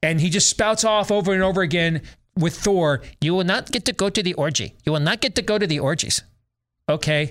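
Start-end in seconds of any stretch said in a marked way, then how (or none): 3.2-6.2 high, squeaky put-on character voice. Mimic how he spouts off over and over again with Thor, in a put-on squeaky voice. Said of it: "talking about orgies in a squeaky voice".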